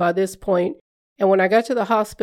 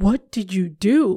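slow, deeply worried, very concerned tone. Telling about a chiropractor visit, the speaker imitates the chiropractor's very concerned voice. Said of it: "he said in a very concerned voice".

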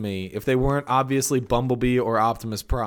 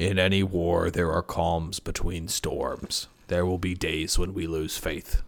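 put-on robot leader voice, lower and quieter; 7 semitones lower, 5 dB quieter than usual. Quoting a line as Optimus Prime: Optimus Prime voice. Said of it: "this is my best chance to be Optimus Prime".

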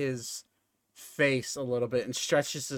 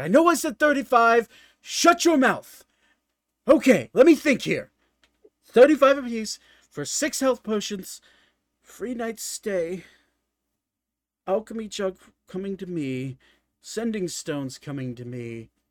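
raised voice, mildly frustrated, patience audibly wearing thin; 7 semitones higher, 8 dB louder than usual. Voicing a character as a player keeps repeating thirty: a little frustrated. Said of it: "he's getting a little frustrated with you repeating thirty".

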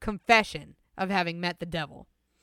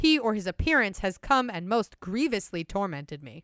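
plain

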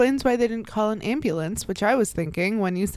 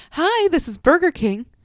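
fake, higher, put-on customer service phone voice; 6 semitones higher, 4 dB louder than usual. Mimicking someone at their job whose voice changes: put-on customer service voice. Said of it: "suddenly they have to put on their customer service voice".

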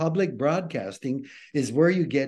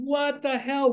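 imitated shout, higher pitch; 11 semitones higher than usual. Retelling a street conversation where the other man asked why he was shouting: retelling own shouting. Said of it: "Why are you shouting?".

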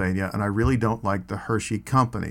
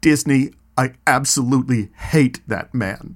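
loud, near-tearful, deeply emotional outburst; 3 semitones higher, 5 dB louder than usual. Retelling what a girl turned and said to him, retelling a very emotional line. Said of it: "in a very, very emotional tone of voice".

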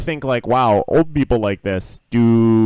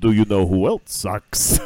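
put-on vampire voice; 2 semitones lower than usual. Joking around with another speaker, someone slips into a quick bit: Dracula impression. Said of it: "That was a Dracula impression".

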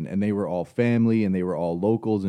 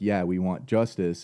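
usual speaking voice

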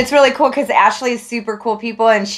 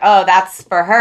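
usual speaking voice

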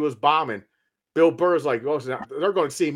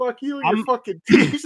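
put-on angry ranting voice, higher pitch; 8 semitones higher than usual. Retelling a comedian's pissed-off rant: imitating Bill Burr's pissed-off rant. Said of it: "he gets pissed off and he just goes at it".

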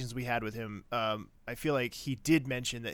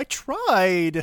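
put-on very loud, high little-boy whine, "tried" stretched out; 8 semitones higher, 11 dB louder than usual. Quoting a character's line from an episode: imitating Gallant as a whiny little boy. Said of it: "He sounds like such a, like, whiny little boy".

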